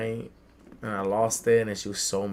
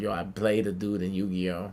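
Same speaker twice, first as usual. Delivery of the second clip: ordinary talk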